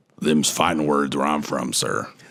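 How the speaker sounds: low-pitched impression voice. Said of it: "my Arthur Morgan voice".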